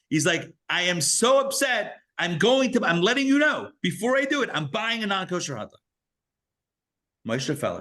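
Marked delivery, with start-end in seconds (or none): 0.7-5.8 put-on, very high, upset screaming. Retelling a man calling his rabbi, imitating him screaming on the phone. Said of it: "He's like screaming on the phone".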